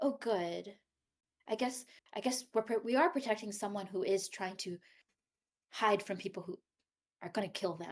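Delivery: half-whispered, under the breath. A player voicing her character sitting on someone's shoulder, half-whispering to herself. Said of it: "kind of like whispering to her, herself".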